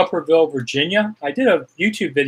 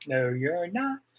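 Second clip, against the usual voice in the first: normal talking voice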